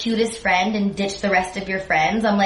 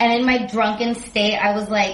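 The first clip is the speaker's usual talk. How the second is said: usual speaking voice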